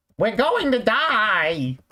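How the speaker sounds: very high, swooping, slow voice, "die" stretched out. Voicing a crashing character as a self-admitted poor impression: Mike Wazowski voice. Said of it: "Pretend this is a good Mike Wazowski impression".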